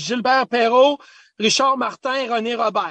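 put-on French accent with broken English. Retelling what his father said in broken English, imitating father's French accent. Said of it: "it just with the French accent".

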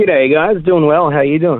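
Australian accent. Greeting the hosts on joining from the United States: Aussie accent. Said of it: "Look at that Aussie accent come right back".

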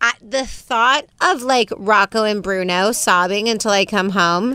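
put-on crazy-sounding girly voice. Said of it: "without using my crazy girl voice".

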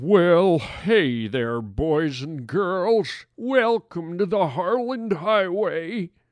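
put-on old farmer character voice. Welcoming the boys and girls to the harland highway, talking like an old farmer. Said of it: "why am I talking like an old farmer sitting on his front porch?".

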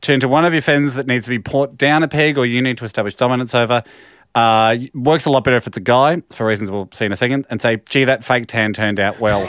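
usual speaking voice

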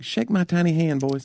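put-on thick Southern accent. Imitating the man they signed the record deal with, put-on thick Southern accent. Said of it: "He had a thick Southern accent".

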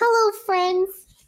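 put-on high, eager small child's voice. Imitating a friend as a small child greeting enemies: imitating little Michael. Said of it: "little Michael going".

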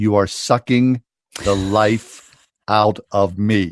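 mock harsh tone, very slow, drawn-out words. Retelling what a friend said to her husband in a quarrel: imitating harsh tones. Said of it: "she said to him in the most harshest tones".

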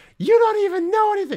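very high, loud, worked-up, upset squeak. Retelling an argument about a new phone, imitating a friend's high upset voice. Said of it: "He loves when I use this voice for him".

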